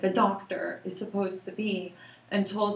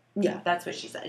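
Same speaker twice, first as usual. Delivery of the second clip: ordinary talk, nothing marked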